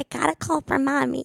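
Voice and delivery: sugary, sweet put-on voice. Speaker imitates her sister, always in a sweeter voice imitating sister. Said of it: "when I do my sister, it's always a sweeter voice than mine".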